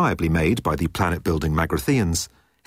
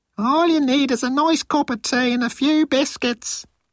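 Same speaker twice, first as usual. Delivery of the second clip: very high, squeaky grandmotherly voice. A man motivates himself with a squeaky impersonation of his grandmother. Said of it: "in a squeaky impersonation of his grandmother".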